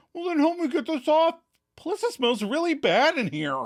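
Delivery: mock whiny, very high, pleading voice. Recapping a scene, quoting a character's request, retelling it with a whiny tone. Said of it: "with a whining tone".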